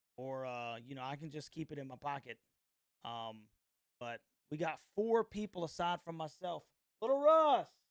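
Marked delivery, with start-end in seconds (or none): 7.0-7.7 very loud, very high yell. Calling someone over to give a score prediction: yelling a name. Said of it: "Sorry if I just yelled in here".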